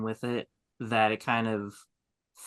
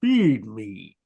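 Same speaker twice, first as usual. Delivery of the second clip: deep, pushed guttural voice; 8 dB louder than usual. Asked to give a taste of Audrey Two's voice: deep guttural Audrey Two voice. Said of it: "give us a little taste of".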